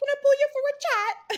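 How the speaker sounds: put-on very high, very loud British accent. Explaining being used to the British accents on the show, British accent. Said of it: "I'm so used to like the British accents".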